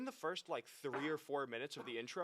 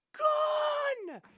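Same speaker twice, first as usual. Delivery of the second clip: very high, loud panicked yell. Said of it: "this lady yells".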